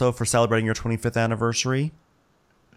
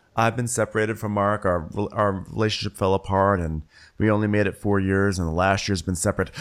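plain

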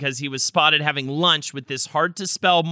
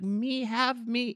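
put-on high, begging, small child's voice; 9 semitones higher, 8 dB quieter than usual. Retelling how Winnie begs for candy: imitating Winnie. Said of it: "she'll just be like".

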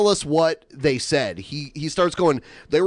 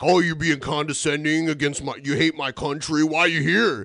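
mock hostile ranting manner. Retelling how the caller must have sounded to the girlfriend: imitating someone being hostile. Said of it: "because you were being hostile".

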